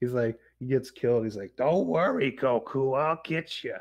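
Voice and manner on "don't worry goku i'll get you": deliberate, pitched-up, drawn-out anime-character voice. Retelling how the afterlife figure reassures Goku: impression of the afterlife figure. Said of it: "That's a pretty good impression".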